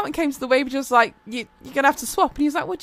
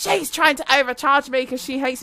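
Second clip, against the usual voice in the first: ordinary talk, nothing marked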